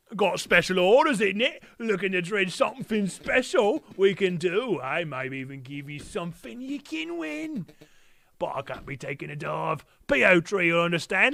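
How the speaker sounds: put-on high-pitched cockney robot voice. The speaker quotes a robot character's lines, in a cockney robot character voice. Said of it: "I nailed his voice".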